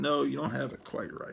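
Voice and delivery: plain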